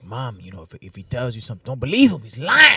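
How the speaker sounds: put-on Spanish-influenced English accent. Acting out advice the kids might give their mom: put-on Chicano accent. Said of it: "his Chicano accent".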